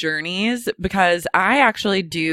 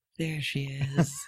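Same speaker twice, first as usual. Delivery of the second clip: mock under-breath muttering, much quieter; 5 semitones lower, 12 dB quieter than usual. Retelling what a fellow taxi passenger said crossing the bridge, an under-breath mutter. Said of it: "Ryan goes under his breath".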